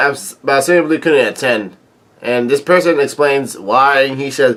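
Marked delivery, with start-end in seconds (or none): none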